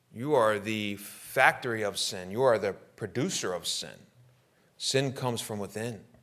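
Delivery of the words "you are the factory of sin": usual speaking voice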